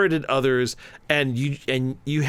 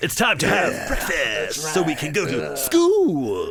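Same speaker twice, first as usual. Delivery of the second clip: mock over-the-top intense film delivery, higher pitch; 3 semitones higher than usual. Imagining talking like the film's lead all the time: imitating the lead's over-the-top way of talking. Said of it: "I talk like that all the time".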